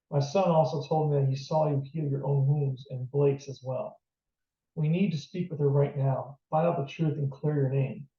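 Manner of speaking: ordinary delivery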